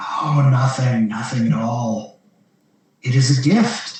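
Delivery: whispering voice. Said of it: "you hear a voice whisper in your ear".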